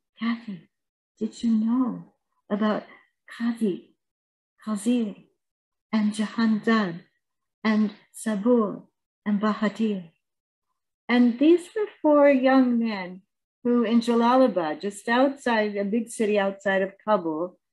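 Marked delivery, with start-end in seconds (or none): 0.2-10.1 very hushed, barely voiced speech. Speaker quoting what a frightened young man asked them: very hushed voice. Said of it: "in a very hushed voice".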